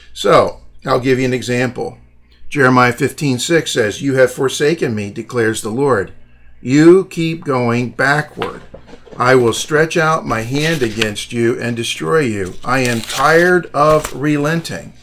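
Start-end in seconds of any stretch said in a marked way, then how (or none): none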